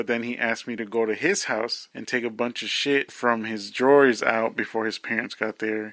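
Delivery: plain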